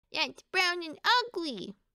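high, bawling, disgusted wail. Reading the duck complaining about the bought beetroot, bawling. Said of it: "bawled the duck".

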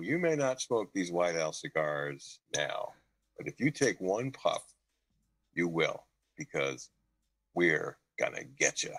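slow, smug, self-satisfied delivery. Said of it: "he'd sit there really smug like that".

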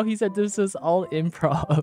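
speaking through laughter. Reading out a chat message, laughing while talking. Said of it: "Why are you laughing?".

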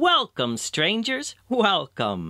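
heartiest, full-hearted tone, pitched very high. Philemon steps forward, hand extended, to greet two strangers: heartiest tone. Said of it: "saying in the heartiest tone".

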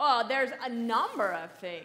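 loud, super snotty little retort. Answering a question about what is being forgotten to tell people, snotty tone. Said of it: "That sounded super snotty".

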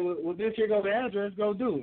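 arrogant, smug, joking, dismissive tone. Speaker retells a police officer yelling back at a woman, imitating a cop joking. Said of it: "being funny".

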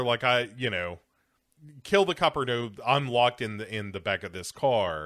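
ordinary delivery

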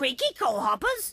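silly, funny big-bird character voice. A hidden bird calls out to an engine driver on Sodor in a funny bird voice. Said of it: "Where's that funny voice coming from?".

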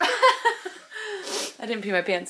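high-pitched, slow, relieved laughing voice.

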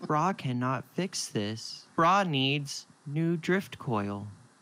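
crestfallen, let-down computer voice. Narrating a scene, the speaker voices the station's AI: Brah, disappointed in itself. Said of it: "It sounds so disappointed in itself".

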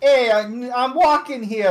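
obnoxious put-on Italian accent, drawn out. Naming a favorite accent while chatting about the sexiest accents, obnoxious Italian accent. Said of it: "like obnoxious Italian accent".

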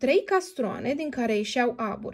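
ordinary delivery, nothing marked

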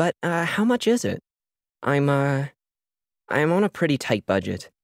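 sheepish voice. Narrator reads Sachio, caught off guard by the offer: sheepish admission. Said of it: "she sheepishly admitted".

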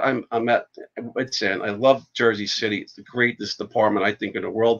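plain

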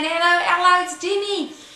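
very high, terrible Australian accent. Recalling how they opened a blog, the speaker uses a bad Australian accent. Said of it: "I was trying to do my whole blog in Australian".

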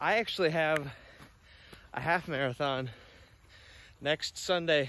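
out of breath, breaking mid-phrase, halting. Walking up a hill while talking to the camera, out of breath. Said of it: "i'm out of breath".

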